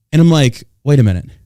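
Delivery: plain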